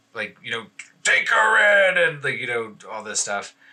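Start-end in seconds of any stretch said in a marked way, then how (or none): 1.1-2.0 very high-pitched, loud yelling. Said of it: "He starts yelling at Cromley".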